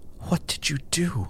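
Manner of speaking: breathless, hushed, out-of-breath delivery. A woman sees the sword on the narrator's back and asks: breathless question. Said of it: "she asked breathlessly".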